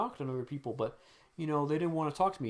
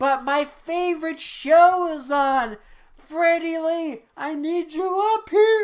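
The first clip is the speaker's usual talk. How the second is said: put-on very high, shrill, very loud old woman's holler; 13 semitones higher, 12 dB louder than usual. Retelling a grandma yelling at someone who is making dinner: imitating grandma yelling. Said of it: "the grandma starts yelling again".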